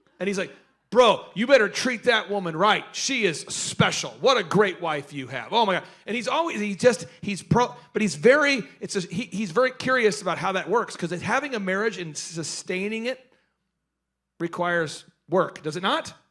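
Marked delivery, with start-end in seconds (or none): 0.9-5.8 put-on aggressive speaking manner. Retelling what a caller said about his wife: imitating an aggressive talker. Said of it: "an aggressive".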